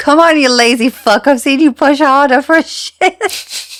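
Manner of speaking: loud, high words breaking up with laughter. Quoting a funny line to a co-host, laughing while speaking. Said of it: "I can't even say it without laughing".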